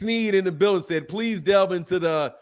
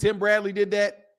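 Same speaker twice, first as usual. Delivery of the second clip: ordinary talk, nothing marked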